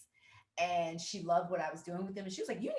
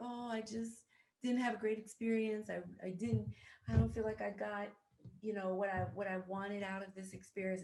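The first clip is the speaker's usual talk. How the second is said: mock upset lament spoken through tears; 3 semitones higher than usual. Retelling an intern's words on her last day: imitating someone in tears. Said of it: "she was in tears".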